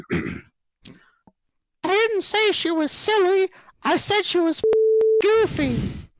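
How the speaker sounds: very high, squeaky little cartoon voice. Telling a joke, Mickey steps up to the mic to answer the judge, in a Mickey Mouse voice. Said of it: "you have to do a Mickey Mouse voice".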